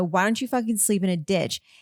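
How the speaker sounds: put-on, angry, snapping, retorting tone. Retelling what was said after being annoyed: imitating own angry retort. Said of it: "Lawrence pissed me off and I go".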